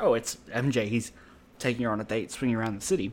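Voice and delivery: ordinary talk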